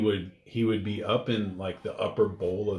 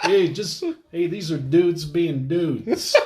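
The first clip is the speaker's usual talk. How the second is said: heavy put-on Chicago accent, loud and high; 8 semitones higher, 8 dB louder than usual. Mocking a man in a cringy video, repeating his line: thick chicago accent. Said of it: "he's kind of thick Chicago accent".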